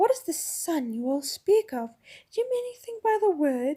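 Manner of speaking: cooing witch voice like a wood-pigeon. Narrator reading a story, voicing the witch's question; soft cooing witch voice. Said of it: "cooing softly like the voice of a wood pigeon".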